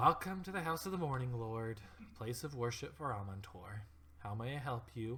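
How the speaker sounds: exasperated, weary, sighing, going-through-the-motions tone. Voicing a priest who greets unwelcome visitors: weary sighing greeting. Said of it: "audible sigh".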